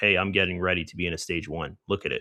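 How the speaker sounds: ordinary talk, nothing marked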